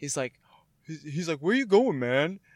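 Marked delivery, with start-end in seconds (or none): 1.4-2.4 higher-pitched put-on cartoon voice. Retelling a Family Guy bit where Africa calls after South America: Family Guy Africa voice.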